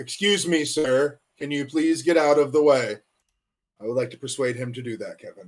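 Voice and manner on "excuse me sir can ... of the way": very stern, strict, scolding big-sister voice. A player's character steps up to the Cyclops in big-sister mode, speaking very sternly. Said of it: "look at the Cyclops and very sternly say".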